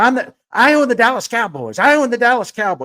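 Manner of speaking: play-acted, high, repeated screaming outburst. Recounting a man screaming at someone as he's led out, imitating someone screaming. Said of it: "he's screaming at him".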